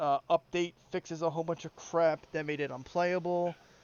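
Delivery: ordinary talk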